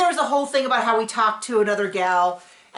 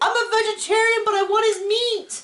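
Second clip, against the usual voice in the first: very high-pitched shrieking screech; 10 semitones higher than usual. Retelling a scene from the show, imitating her: imitating someone screaming.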